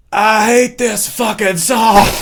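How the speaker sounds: put-on very high, very slow whispered half-scream. Retelling what a drunk friend said at a show: whisper scream. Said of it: "that whisper scream I just did".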